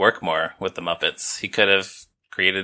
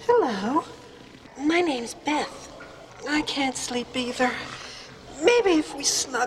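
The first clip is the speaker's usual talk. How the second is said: put-on feminine character voice; 5 dB quieter than usual. The same male performer voicing several roles does a feminine voice for Beth. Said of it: "just a more feminine voice for Beth".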